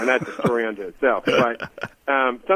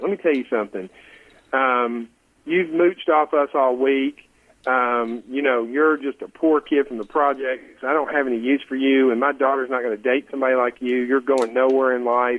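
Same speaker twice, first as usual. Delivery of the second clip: ordinary delivery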